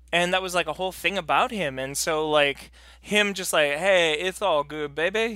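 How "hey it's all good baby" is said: put-on lisping voice, slower pace. Showing how the man with the famous lisp talked, do a Dusty Rhodes lisp. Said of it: "had a lisp".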